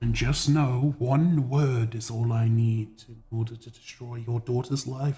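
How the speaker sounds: said quietly. Voicing a character who puts a hand on a shoulder and threatens: said quietly. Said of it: "sort of say quietly to you".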